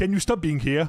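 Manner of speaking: mock passive-aggressive delivery. Retelling a reply to being told to stop being aggressive: imitating own passive-aggressive reply. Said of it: "the passive aggressive was already built in".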